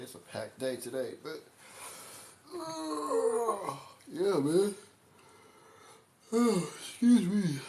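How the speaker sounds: words stretched by a yawn, very high, slow. Talking to viewers about a packed day, yawning while talking. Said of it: "I can't stop yawning for some reason".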